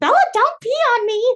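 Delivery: very high, loud scream with voice cracking. Retelling how Caden screamed at the speaker, imitating Caden screaming, voice cracking. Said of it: "he screams and his voice cracks while he's screaming".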